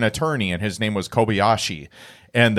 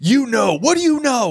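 screeching, shrill scream pitched way up high; 13 semitones higher, 3 dB louder than usual. Retelling a movie scene where a detective interrogates someone: imitating a detective screaming. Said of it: "screaming at him".

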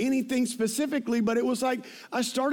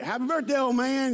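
put-on South Georgia accent. Retelling a relative's birthday greeting, imitating brother-in-law's South Georgia accent. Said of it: "so you gotta say it like him".

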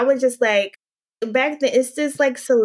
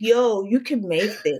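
put-on New Jersey accent. Telling about showing her coworker what she made, quoting his reaction: imitating Jamel's Jersey accent. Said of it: "he has like a Jersey accent".

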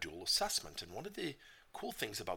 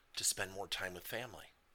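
ordinary talk, nothing marked

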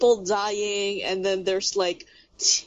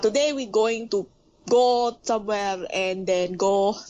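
English spoken with a Filipino accent. Explaining how Filipinos sound speaking English, the speaker demonstrates a Filipino English accent. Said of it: "it will sound like this".

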